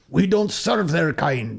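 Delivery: princess voice in a put-on Scottish accent. Retelling what the princess said at the banquet, in a scottish accent. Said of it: "with a Scottish accent".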